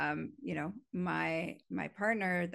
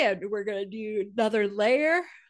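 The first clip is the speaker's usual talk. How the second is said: yawning, higher and louder; 3 semitones higher, 6 dB louder than usual. Telling listeners about next week's session with a buddy, yawning. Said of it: "Sorry, yawning".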